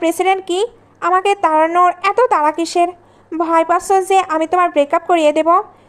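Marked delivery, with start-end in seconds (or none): none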